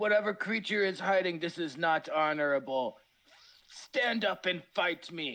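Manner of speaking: mild, in-character calling out. Playing a character who calls out a hidden creature: yelling a challenge in character. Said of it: "I'm gonna yell out".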